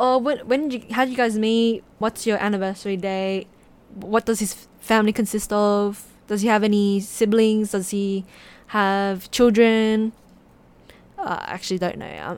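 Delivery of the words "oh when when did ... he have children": ordinary talk, nothing marked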